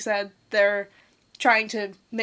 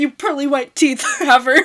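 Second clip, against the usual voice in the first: fake sassy delivery, higher pitch and louder; 5 semitones higher, 9 dB louder than usual. Making a plain observation as a joke insult: mock attitude. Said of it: "but saying them with an attitude".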